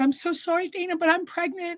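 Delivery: crying, very high voice, speaking through tears. Retelling the sister's words through tears to paramedics: imitating someone crying. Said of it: "tears streaming".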